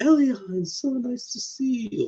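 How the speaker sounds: very high, very drawn-out changed character voice. Imitating how a character greets Elian: imitating a character's changed pitch. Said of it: "his voice actor changes his pitch".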